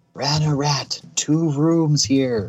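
whisper-yelling. Calling in character to a split-off party member: whisper-yelling. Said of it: "going to whisper yell".

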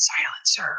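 whispered voice. Acting as a masked character grabbing an ally's shoulder: whispering through a mask. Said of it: "I'll be whispering through the mask".

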